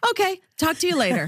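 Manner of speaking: brisk delivery, high-pitched and fast.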